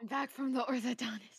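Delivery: winded, breathless and panting. Rejoining the call right after an orthodontist visit, out of breath. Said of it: "You sound so out of breath".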